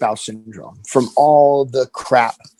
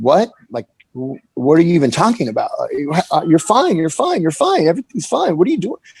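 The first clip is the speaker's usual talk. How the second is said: bewildered, swooping, stumbling stammer in disbelief; 4 semitones higher than usual. Retelling his own reply to a partner's accusation: imitating own bewildered reply. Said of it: "I was just bewildered".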